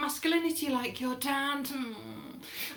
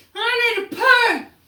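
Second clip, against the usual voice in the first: put-on very high, very loud, drawn-out drunken holler; 9 semitones higher, 12 dB louder than usual. Retelling tripping drunk and in pain: imitating own drunken shout. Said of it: "I shouted out".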